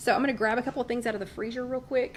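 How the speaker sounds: super fast, rushed talking.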